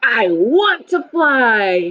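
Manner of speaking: resolute, very slow voice, fly stretched out. Discussing how Andy sounded when he wanted to fly like a bird, determined voice. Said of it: "His voice sounded d- determined".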